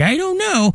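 put-on high-pitched old man voice.

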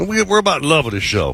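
booming preacher voice, pulpit proclamation style. A show host plugging a fishing captain to listeners, in a preacher voice. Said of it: "Is that your preacher voice?".

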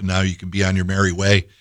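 plain

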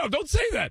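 put-on alarmed father voice.

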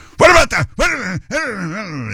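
very high, snarling, barking jab. Mocking how an interviewer asks questions: snarling Stephanopoulos impression. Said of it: "He's like a snarling little pit bull".

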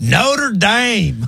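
over-the-top country accent, laid on hard. Showing how the group says a name after watching a movie, exaggerated country accent. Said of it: "countryfy it as hard as we can".

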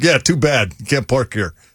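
imitated New Jersey accent. Retelling the guy at a full parking lot turning his brother away, in a New Jersey accent. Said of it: "total jersey".

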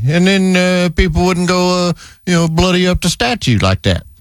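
ordinary delivery

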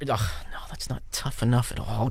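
soft, disappointed whisper, said quietly.

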